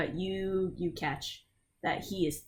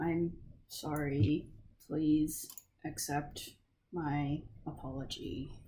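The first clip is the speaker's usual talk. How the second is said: mock speech through gritted teeth; 3 semitones lower, 6 dB quieter than usual. Describing a man told to repeat his apology, imitating it through gritted teeth. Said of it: "grimacing through his teeth".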